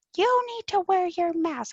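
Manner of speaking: high, screaming, demanding delivery. Retelling a guy screaming at an aunt about her mask: imitating someone screaming. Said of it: "this guy was screaming at her".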